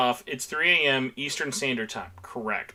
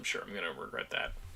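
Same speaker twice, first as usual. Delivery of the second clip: ordinary talk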